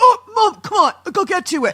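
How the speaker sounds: put-on shrill, booming, drawn-out teenage boy yell. Parent imitating their teenage son's reply when asked about his room, impression of a teenage boy. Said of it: "you do the best impression of a teenage boy".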